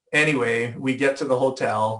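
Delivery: ordinary delivery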